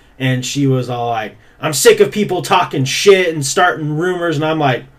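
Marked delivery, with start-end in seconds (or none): 1.6-4.4 angry, fed-up, pissed-off complaining outburst. Retelling what an upset girl said on the stairs: imitating an angry girl. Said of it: "she was fucking pissed off".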